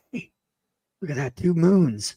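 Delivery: put-on whisper. Retelling how a moviegoer behind them whispered to a companion: imitating someone whispering. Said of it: "You could hear him whisper".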